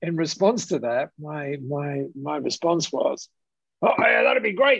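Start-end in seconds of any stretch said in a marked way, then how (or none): 3.8-4.8 put-on Australian bloke voice, higher. Retelling his own past reply to a business idea: imitating an Aussie bloke. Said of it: "I was what's called an Aussie bloke".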